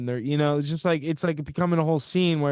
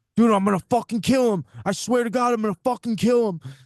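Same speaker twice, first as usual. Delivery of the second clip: fierce, intense, dead-serious, high-pitched; 7 semitones higher, 4 dB louder than usual. Retelling a bleeding guy's threat to his friend: imitating an intense threat. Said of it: "sounded so intense".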